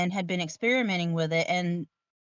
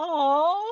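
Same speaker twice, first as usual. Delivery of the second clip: put-on high, loud, gushing delight like a thrilled kid. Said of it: "I was like".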